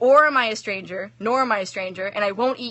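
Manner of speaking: ordinary delivery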